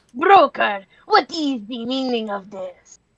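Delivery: put-on vague, light French accent. Choosing a voice for a game character, the speaker tries a light French accent. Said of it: "He's like kind of French".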